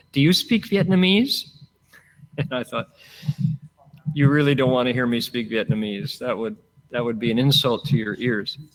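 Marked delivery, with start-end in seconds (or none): 0.1-1.5 sweet, pitched-up tone. Speaker retells an older sister asking him a question, imitating a sweet voice. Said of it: "she said to me in a sweet voice".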